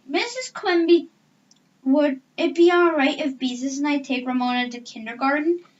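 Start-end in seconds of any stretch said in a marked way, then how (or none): none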